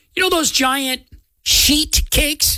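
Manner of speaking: slow, careful, deliberately spaced-out words. On the radio, saying a word carefully so it won't sound like swearing, nice and slow. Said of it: "I have to say it nice and slow".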